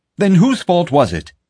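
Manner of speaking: very high, insistent, demanding. Reading a man's line to the only security officer on duty: demanding. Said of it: "Pete demanded".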